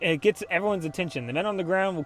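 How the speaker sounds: plain reading voice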